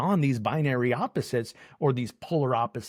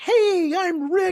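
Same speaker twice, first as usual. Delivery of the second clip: very high, loud, shrill, over-the-top eager tone; 6 dB louder than usual. Retelling own first greeting to a reserved London audience: imitating own over-the-top greeting. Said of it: "full idiot in a bad way, over the top".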